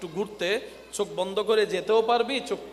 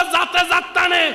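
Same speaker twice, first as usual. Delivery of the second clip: put-on Chittagong accent, higher and louder; 11 semitones higher, 10 dB louder than usual. Quoting a local proverb as people say it: saying in Chittagonian dialect. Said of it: "চট্টগ্রামের ভাষায় বলে".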